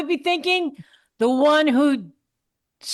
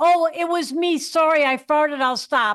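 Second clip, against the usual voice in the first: ordinary talk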